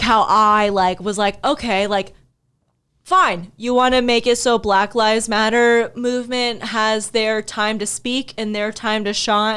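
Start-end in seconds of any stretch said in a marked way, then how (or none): none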